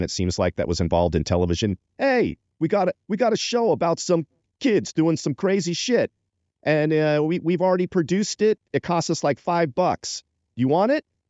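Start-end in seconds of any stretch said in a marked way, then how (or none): 2.0-11.0 put-on New York accent, higher pitch. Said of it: "everyone had a New York accent back then".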